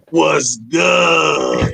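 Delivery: wild, unhinged, rough put-on voice, drawn-out "good". Acting out the player's words after slamming it down: put-on crazy voice. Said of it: "In my crazy voice".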